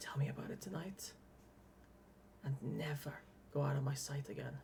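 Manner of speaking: tiny voice, barely a whisper. Retelling a forehead-to-forehead moment, he speaks in a very small voice. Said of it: "And he says in a very small voice".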